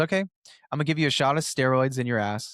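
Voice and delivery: ordinary talk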